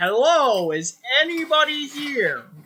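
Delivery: very loud, severe, stern, commanding shout. A player in a game says what they call out: very loud, stern voice. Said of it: "very loudly and with a very stern voice say".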